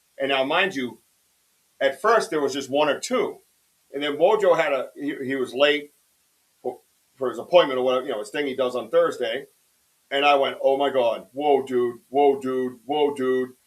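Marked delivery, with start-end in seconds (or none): 10.6-13.5 stunned, excited, repeated freaking-out outbursts. Retelling own reaction as lights appeared in the sky: retelling freaking out. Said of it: "as I was freaking out".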